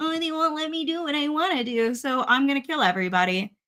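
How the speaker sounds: put-on high, whiny, spoiled-baby whinging voice. Mocking a character's complaint about being held back: whiny Anakin voice. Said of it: "he's a whiny baby who's like".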